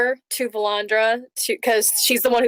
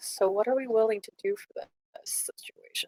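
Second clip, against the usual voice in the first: very quiet, hushed whisper; 9 dB quieter than usual. Voicing a character who whispers to a companion behind a cupped hand: very quiet whisper. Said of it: "cup your hand around your mouth to block the whispering and just very quietly".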